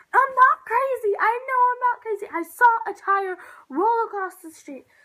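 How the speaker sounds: loud, high-pitched, insistent scream. Retelling screaming at a dad inside Walmart: retelling screaming at someone. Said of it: "I'm screaming at him".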